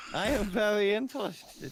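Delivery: put-on German accent, very high-pitched. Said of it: "Why are you doing a German accent".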